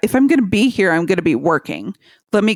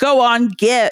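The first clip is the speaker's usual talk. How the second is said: mock, put-on shouting; 3 semitones higher than usual. Retelling a scene where a character shouts at something outside: imitating someone shouting. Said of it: "He starts shouting".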